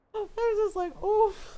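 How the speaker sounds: plain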